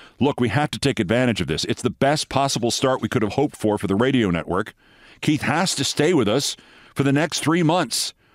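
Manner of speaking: plain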